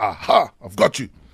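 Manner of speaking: deep, dramatic, theatrical villainous leopard voice. Speaker answering a quiz question, voicing the leopard's line in a dramatic leopard voice. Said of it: "I'm auditioning to be the voice of the new Lion King".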